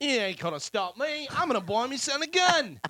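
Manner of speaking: fake English accent, very high-pitched. Joking about a news story in a put-on english accent. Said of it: "Do an English accent".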